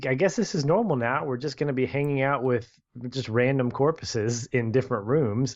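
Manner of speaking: plain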